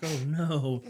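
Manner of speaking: sheepish, guilty little dog voice. Retelling how the dog reacts when asked about peeing: voicing the dog Daphne. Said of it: "put her head down and be like".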